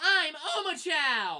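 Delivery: loud, squeaky robot voice with swooping pitch. Complaining about an annoying game robot, the speaker mimics it in a squeaky Omochao voice. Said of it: "it has a loud, squeaky, obnoxious voice".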